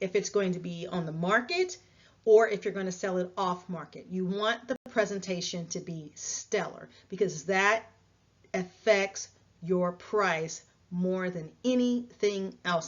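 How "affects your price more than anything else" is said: slow, deliberate, measured, weighty emphasis. Giving selling advice, a key point in a slow, weighty delivery. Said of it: "I said it slowly and with effect for a reason".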